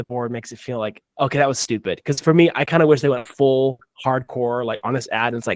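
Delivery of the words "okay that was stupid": ordinary delivery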